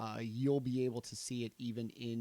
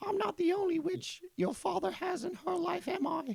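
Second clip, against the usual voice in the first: piercing, shrill, very high woman's voice; 5 dB louder than usual. Voicing the witch answering the one who silenced her: shrill female voice. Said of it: "And then a shrill female voice".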